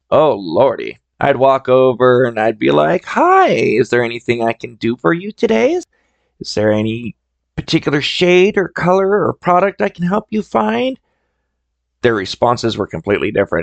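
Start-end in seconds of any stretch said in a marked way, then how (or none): 3.0-11.0 high, flamboyant, charm switched on. Retelling how they would approach shoppers in the department, putting on the flame. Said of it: "kind of turned on the flame".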